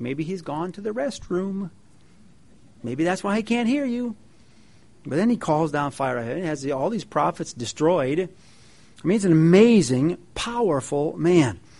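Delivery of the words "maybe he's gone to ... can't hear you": mocking, soft, sarcastic taunting tone. The speaker retells Elijah mocking the prophets of Baal: put-on sarcasm. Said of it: "Elijah gets pretty sarcastic".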